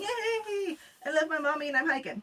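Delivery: high, super happy voice with long drawn-out yay. Recalling a short test hike carrying him, voicing him super happy. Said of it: "he's super happy and chilling and".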